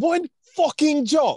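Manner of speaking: put-on slow British-sounding accent. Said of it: "I'm not gonna attempt to do the British accent".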